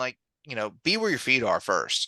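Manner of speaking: usual speaking voice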